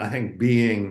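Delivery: "being" stressed hard, with falling tune.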